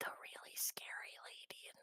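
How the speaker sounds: hushed whisper. Answering who sent them here while everyone's sleeping, whispering. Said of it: "they're gonna whisper because everyone's sleeping".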